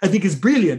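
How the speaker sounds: put-on Israeli accent, laid heavily on the words. Quoting how a man talks, in an Israeli accent. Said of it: "And you got the Israeli accent".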